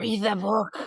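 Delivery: creepy hushed whispering voice. Showing the voice used at night while everyone's asleep, creepy whispering voice. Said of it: "it's me going like this creepy ass voice".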